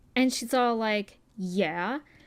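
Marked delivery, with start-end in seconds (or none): 1.4-2.0 acted sassy, curt, snippy yeah full of attitude. Retelling a dog owner's reply to a question: imitating a woman's attitude. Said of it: "with this attitude".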